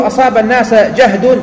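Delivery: ordinary delivery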